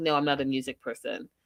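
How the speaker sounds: put-on flat delivery. Recounting a speed date, the speaker quotes the man's answer: imitating a deadpan reply. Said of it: "he does it like deadpan like that".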